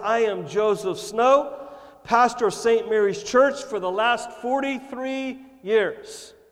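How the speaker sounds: grand, loud, booming proclamation voice. Telling a joke, a pastor introduces himself to St. Peter, booming loud voice. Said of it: "he booms out with a loud voice".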